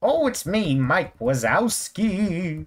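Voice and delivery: drawn-out, swooping up to a high pitch. Voicing a crashing character as a self-admitted poor impression: Mike Wazowski voice. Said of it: "I warned you I don't do it".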